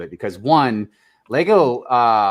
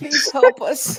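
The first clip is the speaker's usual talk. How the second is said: mock begging, higher. Mocking Lego as a suffering little match girl: mock pleading. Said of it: "Lego's like the little match girl".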